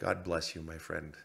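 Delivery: murmur under breath. Retelling what a man walking past said: retelling an under-breath remark. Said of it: "Under his breath, very quietly".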